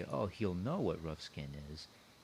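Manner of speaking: ordinary talk, nothing marked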